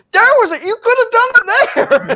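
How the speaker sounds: mock, very high-pitched, shrill, loud frustrated yell. Retelling screaming at the TV during a BattleBots match: imitating own screaming at TV. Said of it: "I'm screaming at the T V going".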